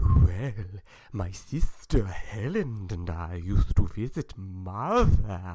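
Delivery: very slow, loud drawl, every word dragged out. Showing how a playwright talks: Edgar Oliver impression. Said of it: "I'm doing a spot-on impression".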